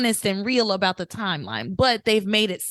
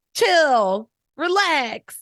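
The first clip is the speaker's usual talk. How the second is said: put-on laid-back voice, higher pitch; 6 semitones higher, 4 dB louder than usual. Showing an impression of Chad's catchphrase: Chad impression. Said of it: "my Chad impression".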